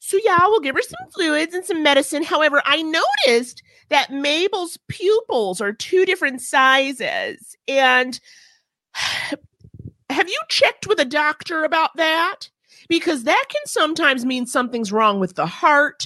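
put-on high, swooping, sing-song baby voice. Retelling the vet's findings about the pet, imitating her baby voice. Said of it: "these vets are out here with these baby voices".

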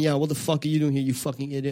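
hostile, angry, insulting outburst. Retelling how the stage persona attacked audience members: imitating angry stage persona. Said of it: "because the persona's angry".

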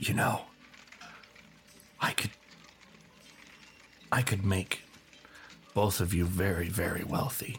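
hushed whisper. A game master voices a character leaning in toward two players, whispering. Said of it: "He kind of leans in and he whispers".

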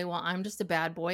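ordinary delivery

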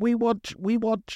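very high, slow, drawn-out broken English. Retelling what a prisoner said: imitating broken English. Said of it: "in broken English is going".

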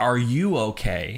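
usual speaking voice

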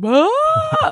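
very high mock shriek of shock.

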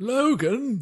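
very high, remorseful. Doing an impression of a character calling someone leaving: Professor X voice, remorseful. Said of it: "It was like remorse".

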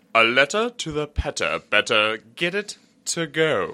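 high, loud, formal butler voice. Repeating a tongue twister to a listener: butler voice. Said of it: "That was my butler voice".

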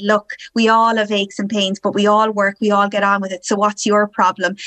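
ordinary talk

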